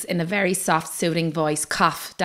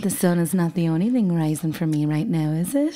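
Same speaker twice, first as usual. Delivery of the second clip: put-on, teasing, seductive, sultry voice. Putting on a voice for a joke: mock dirty talk. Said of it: "I love dirty talk".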